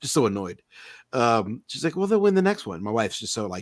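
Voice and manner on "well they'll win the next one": put-on sweet, comforting tone, pitched up. Retelling what a wife said after the team lost: imitating wife being nice and sweet. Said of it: "trying to be nice and sweet".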